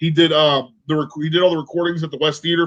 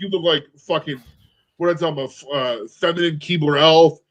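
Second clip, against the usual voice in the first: plain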